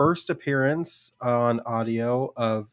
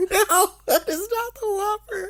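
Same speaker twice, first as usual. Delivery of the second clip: very high, shrill, put-on scream. Picturing walking into a Burger King: mock scream.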